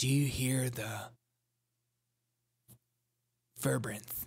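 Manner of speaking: mock-sincere low tone. Mocking a council-style apology and asking if listeners hear it, in a mock-solemn lowered voice. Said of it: "by lowering the tone in my".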